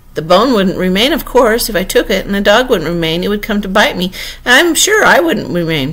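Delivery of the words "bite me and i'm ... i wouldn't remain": ordinary delivery, nothing marked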